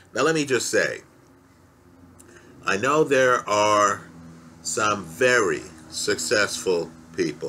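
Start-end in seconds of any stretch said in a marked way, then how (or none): 4.6-7.5 very stressed hard, said low. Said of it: "let me underline the word very".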